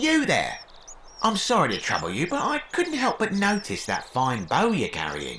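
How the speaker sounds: put-on slight Cockney accent. A game character addresses the player, slight Cockney accent. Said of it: "He speaks with a slightly Cockney accent".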